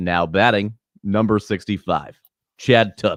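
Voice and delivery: ballpark public-address announcer voice. Recalling announcing Little League games at twelve, showing how, in an announcer voice. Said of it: "I would do it like this".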